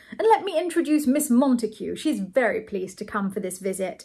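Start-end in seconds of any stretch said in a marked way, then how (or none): none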